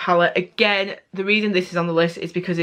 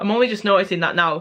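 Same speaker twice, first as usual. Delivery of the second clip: ordinary talk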